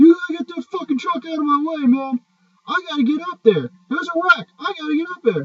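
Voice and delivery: mock very high, loud, shrill screaming. Retelling a tow truck driver in the speaker's face: imitating someone screaming. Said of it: "gets in my face and starts screaming at me".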